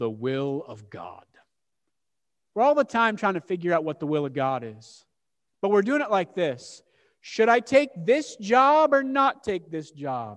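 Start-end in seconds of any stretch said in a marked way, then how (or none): 0.0-1.2 very low, deep, drawn-out, slow Scottish accent. A speaker wishing for a Scottish accent tries one: deep voice, Scottish accent. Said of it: "Deep voice, Scottish accent".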